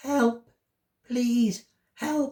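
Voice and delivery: tiny, little, high voice calling out. Reading a story, a voice calls for help from inside a log, tiny voice. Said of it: "he heard a tiny voice calling out".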